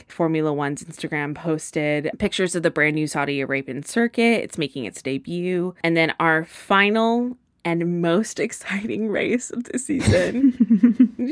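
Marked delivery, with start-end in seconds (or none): 5.8-11.3 slow, drawn-out, sarcastic fake excitement. Previewing the last race of a season schedule, sarcastic. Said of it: "she says sarcastically".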